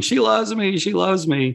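very high, elated, joyful screaming. Retelling dancing around the fire after first hearing I love you, retelling a scream. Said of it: "just screaming".

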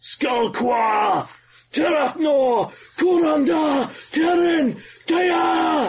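very high, top-of-lungs bellowing battle shout. Narrator describing a battle scene, Krogan's bellowing war cry. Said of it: "shouts bellowingly at the top of his lungs".

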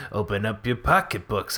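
eerie, unsettling, creepy put-on voice. Quoting a movie line as a joke: creepy voice. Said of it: "I'll say it real creepy like".

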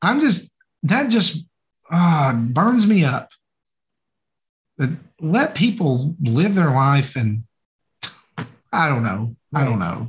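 flustered, worked-up ranting delivery. Speaker gets worked up about people criticizing games others enjoy; flustered. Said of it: "I'm all flustered".

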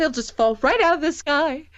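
put-on, high, choked-back tearful voice. Retelling a woman's line about her, imitating choked-back tears. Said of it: "She's choking back, like, a little bit of tears".

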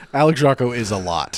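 ordinary talk, nothing marked

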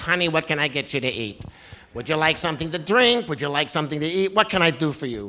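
doting motherly tone.

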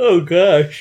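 words swallowed, spoken through a yawn. Speaker trailing off after a long explanation, yawning. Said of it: "You're yawning already?".

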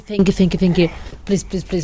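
normal talking voice

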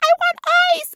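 mock shrill, very high shrieked screaming. Retelling demands screamed at a boyfriend during pain: imitating own past screaming. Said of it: "I'm screaming at him".

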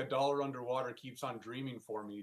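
ordinary talk

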